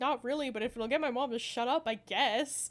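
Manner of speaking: ordinary delivery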